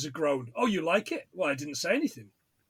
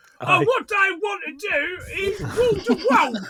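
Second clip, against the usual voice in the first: put-on Cockney accent, pitched very high; 6 dB louder than usual. Quoting a townsperson at a town meeting: put-on cockney accent. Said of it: "sounds like me doing Cockney accent".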